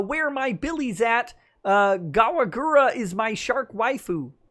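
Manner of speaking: high, slow, drawn-out, squeaky character voice. A streamer reads out a viewer's chat message on request, in Kermit the Frog voice. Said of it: "he wants me to do this in Kermit the Frog voice".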